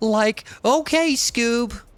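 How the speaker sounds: bad, high-pitched put-on cartoon voice. Playing a city builder, breaking into a bad Shaggy impersonation. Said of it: "a really bad impersonation of Shaggy".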